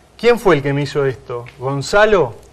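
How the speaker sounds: ordinary talk, nothing marked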